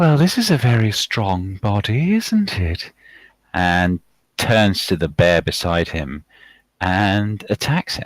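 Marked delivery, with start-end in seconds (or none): 0.0-2.9 rather feminine-sounding, swooping character voice. Voicing a snarling game character before he attacks: more feminine voice. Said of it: "a kind of rather more feminine voice than you're used to from him".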